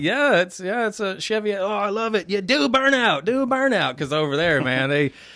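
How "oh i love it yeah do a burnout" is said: put-on Australian accent, higher, louder, slower. Retelling an old Australian man at a traffic light; imitating an Australian accent. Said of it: "his straight Australian guy".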